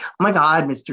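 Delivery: put-on talking like a teen. Retelling how a girlfriend teases, imitating a teenager's talk. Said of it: "talking like she's, you know, like a teenager".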